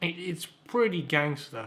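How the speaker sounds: slow, drawn-out, dripping with sarcasm. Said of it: "sarcasm aside".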